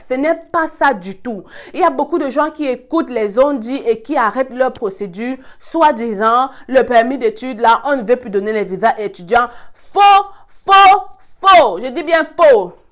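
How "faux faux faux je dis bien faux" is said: shouting, higher, louder, slower. Explaining something to followers who sent many messages: shouting. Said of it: "J'arrête de crier".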